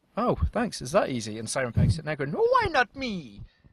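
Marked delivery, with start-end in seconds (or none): 2.3-3.4 put-on weird Italian accent, very high and drawn out slowly. Imagining an actor complaining about not being cast, in a weird Italian Mario accent. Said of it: "In a weird Italian accent".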